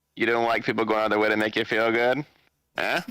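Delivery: plain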